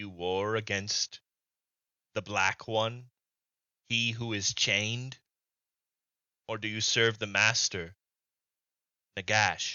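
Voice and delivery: grinding, stone-on-stone voice. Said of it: "stone on stone grinding".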